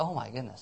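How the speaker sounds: heavily sarcastic, mock amazement. Mocking how rare lasting marriage and fatherhood have become: sarcastic. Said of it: "I know I'm being sarcastic".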